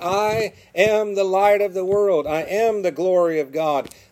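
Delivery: acted loud shouting. Retelling the gospel story, the speaker quotes Jesus crying out, retelling a loud shout. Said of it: "shouts out in a loud voice".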